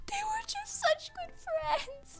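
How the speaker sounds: weepy sobbing, high, teary crying voice, pitched way up. Imitating a friend who starts crying immediately: imitating someone crying. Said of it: "she would start crying immediately".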